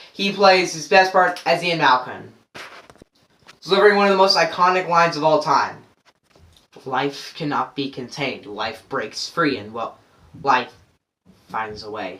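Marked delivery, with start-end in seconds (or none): 6.9-12.2 deep voice, barely above breath. Delivering an iconic movie line, in a Jeff Goldblum impression. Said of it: "my horrible ass impression of Jeff Goldblum".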